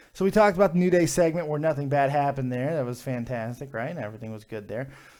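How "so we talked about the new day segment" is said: ordinary delivery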